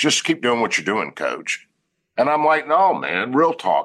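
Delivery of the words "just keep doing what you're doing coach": mock dismissive, brushing-off tone. Coach retells a man's reply about the team buying in; retelling a dismissive remark. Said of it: "And he said dismissively".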